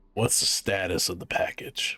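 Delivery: rough, deep, gravelly low rumble. Reading a story, voicing a newly heard speaker: deep, gravelly voice. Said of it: "you hear a deep, gravelly voice".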